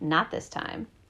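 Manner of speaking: plain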